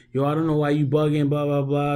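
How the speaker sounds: put-on high, angry, aggressive, in-your-face New York accent. Retelling an angry customer at the counter: imitating aggressive mad New York accent. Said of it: "a bit of a New York accent, but she's, like, real aggressive and mad".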